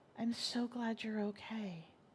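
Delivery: creepily serene voice. Retelling a caller's first words on the phone: imitating a creepily serene tone. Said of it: "in the most creepily serene tone".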